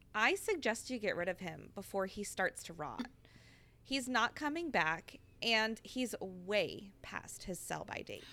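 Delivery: plain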